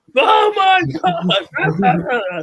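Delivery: mock commentator yell, very high, very slow, stretched-out shriek. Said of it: "Just an entire show of yelling".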